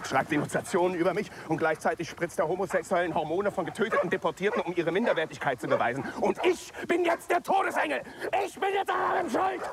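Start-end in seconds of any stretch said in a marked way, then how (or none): 6.2-9.6 high, agitated, worked-up, upset outburst. A character, soon told by another to calm down, in an agitated outburst. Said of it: "Beruhige dich".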